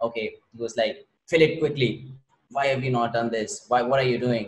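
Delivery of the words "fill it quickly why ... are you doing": put-on harsh tone. Retelling how the guy spoke to him while he was buying a car, imitating a harsh tone. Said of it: "speaking very in a very harsh tone".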